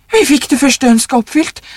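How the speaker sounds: hectic, frenzied pleading. Reading a story, the old wife presses her husband about the second wish: frantic. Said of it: "sa den gamle konen hektisk".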